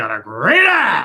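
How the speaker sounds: big, loud, stretched-out movie-devil voice. Quoting a movie scene: Al Pacino voice. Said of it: "Al Pacino goes, like".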